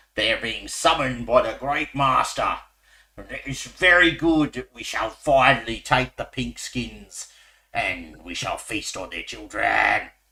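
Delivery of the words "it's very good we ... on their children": orcish monster voice. Narrating to players as orcs are overheard talking about the Great Master, orcish voice. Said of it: "you hear orcish voices talking".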